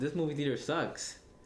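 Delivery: ordinary delivery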